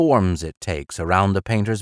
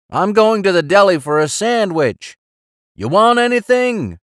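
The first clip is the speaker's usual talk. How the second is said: loud, high-pitched yell; 11 semitones higher, 5 dB louder than usual. The foreman yells across to the house painter: yelling. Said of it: "he yells at the house painter".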